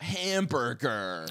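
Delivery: put-on very slow, drawn-out "hamburger" in an American accent. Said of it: "whenever someone does American".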